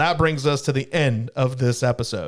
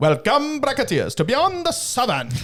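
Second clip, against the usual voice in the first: very high, sing-song leprechaun voice; 11 semitones higher than usual. Podcast host tries out the show intro in a leprechaun voice. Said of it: "I was trying to be like a leprechaun".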